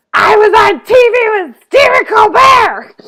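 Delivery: put-on very loud, very high, drunk and boastful. Retelling a drunk host coming out on stage: imitating a very drunk man. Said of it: "he is stinking drunk".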